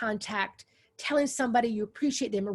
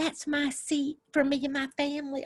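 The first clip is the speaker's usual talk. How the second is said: put-on little old lady voice; 3 semitones higher than usual. Retelling being greeted in a church pew, imitating a little old lady. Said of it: "She's like".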